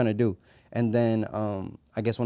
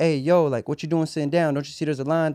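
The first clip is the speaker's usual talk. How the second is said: yelling, pitched higher; 5 semitones higher than usual. Retelling how the manager yelled from the bar: imitating the manager yelling. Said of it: "The manager starts yelling at me from the bar".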